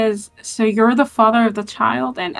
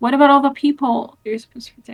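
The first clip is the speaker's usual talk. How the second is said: mildly angry, reproving, challenging tone; 3 semitones higher than usual. Voicing a character confronting someone about the people he should protect: speaking kind of angrily. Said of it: "kind of angrily".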